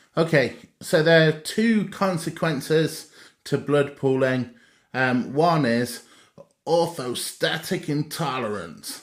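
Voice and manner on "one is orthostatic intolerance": put-on American accent. Explaining the consequences of blood pooling to listeners, put on an american accent. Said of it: "I say that in my American accent".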